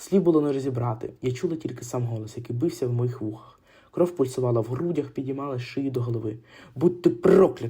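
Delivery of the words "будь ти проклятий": loud, hurled-out shouted outburst. Andrius shouts at the old man as he staggers toward him. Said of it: "крикнув Андрюс".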